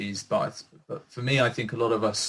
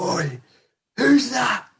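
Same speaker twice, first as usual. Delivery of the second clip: mock booming yell, very high and loud; 12 semitones higher, 5 dB louder than usual. Telling how a man's voice called out across a room: retelling a booming shout. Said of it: "this voice just boomed across the room".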